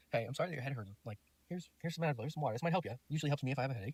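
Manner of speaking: very calm, easy delivery. Retelling offering a date water and advil: imitating own very calm voice. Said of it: "Really calm, very calm like that".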